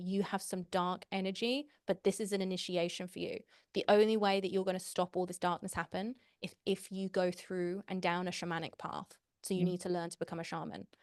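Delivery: plain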